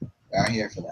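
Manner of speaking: unruffled, utterly composed, very calm and soft. Voicing Fiona stopping another character's threat: Fiona speaking very calmly. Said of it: "As Fiona very calmly".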